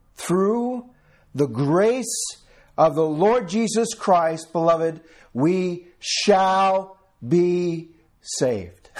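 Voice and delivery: word-by-word, deliberate pace. Repeating a line for the listeners so they hear it clearly, said slowly. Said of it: "I'll say it slow".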